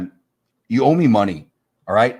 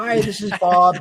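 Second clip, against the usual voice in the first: very high, stock voicemail accountant-style voice; 10 semitones higher than usual. Retelling a voicemail greeting, imitating a voice like an accountant. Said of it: "It sounds like an accountant".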